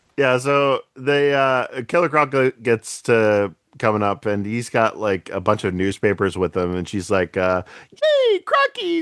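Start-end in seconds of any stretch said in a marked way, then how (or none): 7.9-9.0 very high, dopey, cutesy, silly squeal. Retelling what a character said on greeting Croc: imitating Baby Doll's stupid voice. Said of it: "shut up with that stupid voice".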